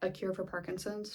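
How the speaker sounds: play-acted flat, bone-dry, expressionless deadpan delivery. Recapping a show scene, Daniel answering Rashid, retold deadpan. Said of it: "very deadpan".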